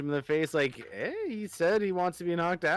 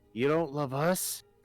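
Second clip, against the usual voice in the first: slightly shocked. A player speaking as his character in a role-playing game, a little shocked. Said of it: "Hawkeye's gonna be like a little, like a little shocked".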